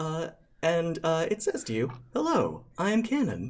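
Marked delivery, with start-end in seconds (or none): 2.1-3.5 put-on female voice, much higher pitch. Game master voicing a Warforged who stops a player's character heading to class. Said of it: "in a distinctly female voice".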